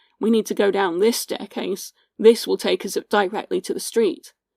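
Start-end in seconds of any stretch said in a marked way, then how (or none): none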